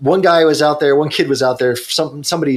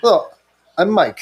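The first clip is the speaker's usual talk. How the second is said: loose, attempted French accent, pitched up; 5 semitones higher than usual. Retelling a French visitor introducing himself: imitating Mike's French accent. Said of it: "I can't do a French accent".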